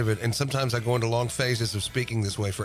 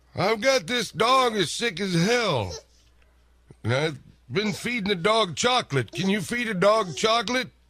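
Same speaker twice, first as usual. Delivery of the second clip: put-on confused old man voice, much higher; 10 semitones higher than usual. Prank-calling a pet clinic about what a puppy can eat: confused old man voice. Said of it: "Today we've got our man of a million voices, Bobbo, harassing an unsuspecting pet clinic as a confused old man, who just wants to know what this puppy can and cannot eat".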